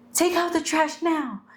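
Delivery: very high, curt, blunt voice. Showing how a blunt request can sound: sounding like my mom. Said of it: "And you sound like my mom".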